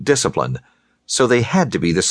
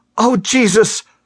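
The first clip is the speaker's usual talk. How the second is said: very high outcry of horror; 13 semitones higher than usual. Nina, looking back beside her two companions, cries out in horror. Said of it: "she cried".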